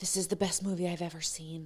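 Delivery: very quiet, very soft, hushed whisper. Retelling what Charlotte leaned over and said during the movie: imitating Charlotte whispering. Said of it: "leaned over and whispered to me".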